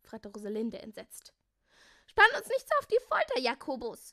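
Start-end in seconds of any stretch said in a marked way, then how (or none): 2.1-4.1 very high, shrill, loud scolding outburst. Melissa, impatient with Jakobus for keeping them waiting, scolding. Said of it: "schimpfte Melissa".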